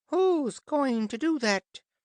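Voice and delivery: squeaky, high and loud. At a council of beasts, Loo the Unicorn rises to ask; high squeaky voice. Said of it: "in a high, squeaky voice".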